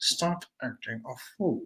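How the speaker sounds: very quiet, slow, hushed, through clenched teeth. Acting out how she scolded him when he did wrong, through clenched teeth. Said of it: "she would say it like through her teeth, like Maya Angelou with an attitude".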